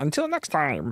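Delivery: soft, attempted cartoon-villain voice. Finishing a Skeletor bit with friends: attempted Skeletor impression. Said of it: "That was more meatwad".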